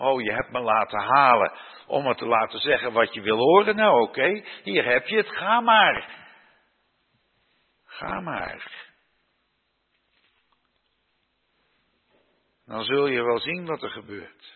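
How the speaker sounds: put-on scornful, heavily sarcastic, jeering. Retelling how one man mocks another and his 400 liars, retelling a sarcastic taunt. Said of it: "Micha die spreekt hier heel sarcastisch".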